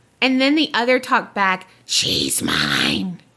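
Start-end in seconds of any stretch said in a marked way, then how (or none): 1.9-3.2 very low, creepy demon whisper with "mine" drawn out. Retelling a terrifying night, the speaker quotes the other voice answering, in a creepy demon Gollum voice. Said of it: "in that creepy demon Gollum voice".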